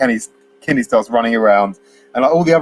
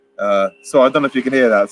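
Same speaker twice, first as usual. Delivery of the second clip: plain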